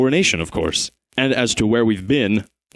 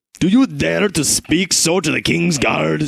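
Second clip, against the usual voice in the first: menacing, threatening snarl, slower; 6 semitones higher than usual. A guard of the king answers the travelling father: menacing snarl. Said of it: "Snarls a menacing voice".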